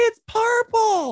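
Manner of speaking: very high-pitched, slow, drawn-out screech.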